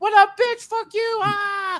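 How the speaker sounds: put-on yelling in Jersey accent. Retelling two childhood friends meeting at an autograph signing, retelling loud Jersey City yelling. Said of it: "went full loud Jersey City, yelling".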